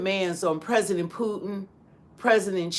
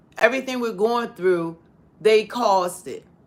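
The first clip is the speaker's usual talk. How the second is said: plain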